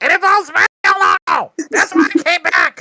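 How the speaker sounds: very high-pitched, shouted character yell. Playing a character who bursts back in, in-character yelling. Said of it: "I just start yelling".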